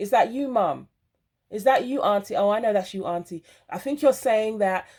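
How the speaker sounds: ordinary talk, nothing marked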